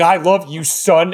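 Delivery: acted tearful, weepy, blubbering crying voice. Retelling a biological father crying in the corner; imitating someone crying. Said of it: "is like crying in the corner going".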